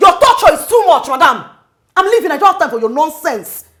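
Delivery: furious, loud, high-pitched angry shouting. Telling the Queen Mother that you are leaving, shouting. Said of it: "Why are you shouting?".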